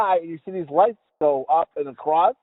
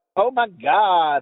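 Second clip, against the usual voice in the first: put-on valley girl voice, much slower. Speaker showing how a Valley Girl talks, in a Valley Girl voice. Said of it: "someone like a Valley Girl talk like".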